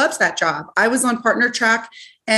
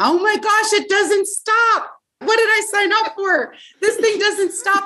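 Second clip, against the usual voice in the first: shrill, very high-pitched, frantic, alarmed yelling; 10 semitones higher than usual. Recalling trying to drive the rv after leaving the dealer, retelling a scream. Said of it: "I just remember screaming".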